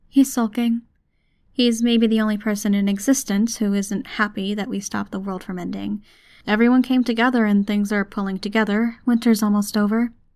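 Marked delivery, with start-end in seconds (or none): none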